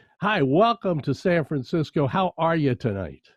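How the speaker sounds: usual speaking voice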